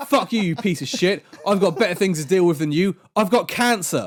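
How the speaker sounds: play-acted worked-up outburst. Retelling an angry reply from a group admin: imitating someone riled up. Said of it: "getting him more and more riled up".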